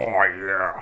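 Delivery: imitated talking with mouth full. Retelling a moviegoer's reaction to Darth Vader: imitating talking with mouth full. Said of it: "a mouthful of food went like".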